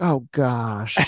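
put-on embarrassed celebrity voice. Explaining a casting pick, the speaker does a mock-embarrassed Jennifer Coolidge impression. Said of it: "That was a great Coolidge impression too".

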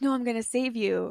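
ordinary talk, nothing marked

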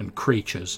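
ordinary delivery

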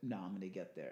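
ordinary talk, nothing marked

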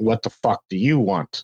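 plain

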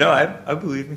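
talking through laughter. Answering a question about fear of god, laughing while talking. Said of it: "why are you laughing then?".

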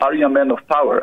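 normal talking voice

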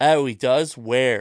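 put-on Pennsylvania accent throughout. Repeating another speaker's words as an impression, in a Pennsylvania accent. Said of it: "what a Pennsylvania accent".

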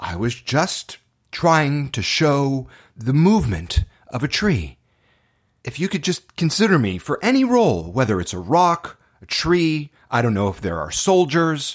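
mock guileless, straightforward, earnest, innocent sincerity. Retelling answering a director after an audition: imitating own earnest innocent reply. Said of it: "really innocently, straightforward, with so much earnestness".

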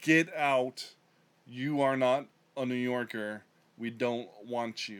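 mock menacing, terrifying voice. Quoting a speech telling people to get out: imitating a terrifying order to leave. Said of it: "that sounded terrifying saying that out loud".

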